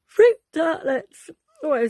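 talking mid-yawn. Reading a recipe name aloud: yawning. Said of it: "sorry, I'm yawning".

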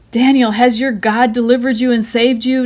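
loud, worried, anxious calling cry. Hurrying to the lions' den at dawn, the king cries out anxiously. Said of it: "Darius cried anxiously".

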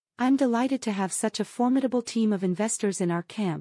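usual speaking voice

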